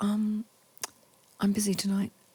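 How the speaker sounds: tiny, soft little voice. Retelling a phone call invitation he declined: imitating a tiny voice. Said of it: "I hear this tiny voice".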